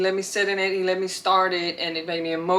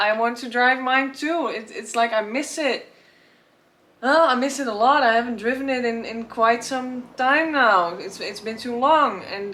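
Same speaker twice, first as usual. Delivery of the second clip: getting a bit emotional, pitched-up voice; 5 semitones higher than usual. Talking about not having driven the car in a long time: getting emotional. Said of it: "getting a bit emotional about it now".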